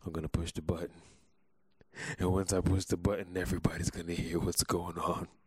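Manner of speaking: eerie, unsettling, creepy-sounding voice. About to push the button, announcing it in a creepy voice. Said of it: "You sound very creepy".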